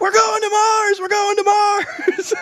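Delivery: put-on shrieking cheer, very high, excited. Retelling running around the neighborhood for a video shot: retelling own screaming. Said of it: "just screaming".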